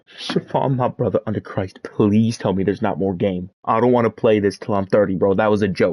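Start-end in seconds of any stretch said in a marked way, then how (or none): none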